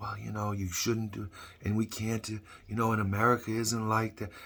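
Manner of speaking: very soft, hushed, gentle, nice, diplomatic-sounding tone. Acting out a diplomat speaking to another country; soft, nice Antony Blinken impression. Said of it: "he talks all nice and soft".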